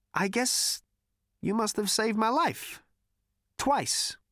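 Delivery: very high-pitched, uneasy and awkward. Zaphod speaks to Marvin, who is wired into the computer, awkwardly. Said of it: "said Zaphod awkwardly".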